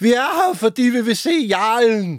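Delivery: starstruck, high, drawn-out ecstatic shout, near fainting. Retelling audience members shouting why they came, imitating an ecstatic shout. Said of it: "så råber de sådan helt kægt, nærmest ved at besvime af begejstring".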